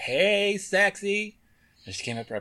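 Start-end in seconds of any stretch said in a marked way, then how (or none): 0.0-1.4 very high, loud calling out. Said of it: "She kept calling".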